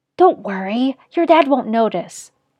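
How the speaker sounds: plain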